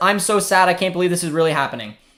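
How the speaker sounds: ordinary talk, nothing marked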